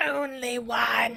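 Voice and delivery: put-on mermaid voice. Retelling a scene where a mermaid points her trident at a boy; mermaid voice. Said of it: "That was my mermaid voice".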